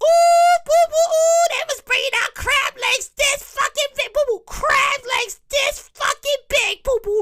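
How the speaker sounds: very high-pitched woman's voice. Retelling a family gathering, the speaker imitates the mother's voice. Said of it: "I have to do my mother's voice".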